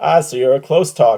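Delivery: said right out loud, openly voiced. Retelling a comedian's reply during a show: imitating someone saying it out loud. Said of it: "he just says out loud".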